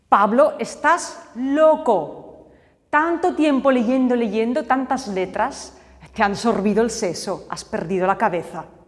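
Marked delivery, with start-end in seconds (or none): none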